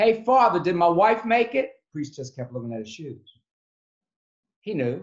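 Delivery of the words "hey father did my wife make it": loud, high screaming. Retelling a man at the bar screaming at a priest: imitating a man screaming. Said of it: "He keeps on screaming at one of the priests".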